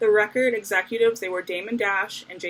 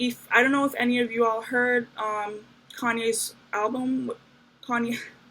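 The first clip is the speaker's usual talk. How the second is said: flustered, nervous, tripping over words, stumbling false start. Speaker explaining chipmunk soul to an audience, nervous and stumbling. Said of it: "I'm really nervous".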